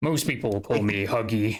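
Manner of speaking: low gravelly voice. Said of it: "changes to a much lower pitch with a bit of a".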